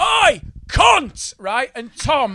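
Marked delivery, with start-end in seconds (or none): 0.0-1.3 mock sudden yell, high and raw. Retelling how a huge man burst in during a show: imitating someone shouting. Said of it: "he just shouted".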